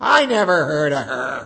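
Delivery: put-on loud, dismissive little girl voice.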